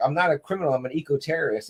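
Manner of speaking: ordinary talk, nothing marked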